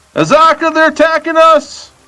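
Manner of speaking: shrill, very high-pitched yell. Player's character calls to an ally during a fight, yelling to an ally. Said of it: "Can I yell to Azaka as well?".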